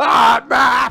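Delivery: very loud, shrill, raw, rough full-volume scream. Recalling a talking map character that shouted its name, retelling a scream. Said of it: "Just screamed it".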